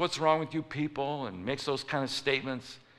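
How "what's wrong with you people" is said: put-on gruff man's voice. Telling a story about a man at Popeye's, imitating him getting gruff. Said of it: "the guy gets real gruff".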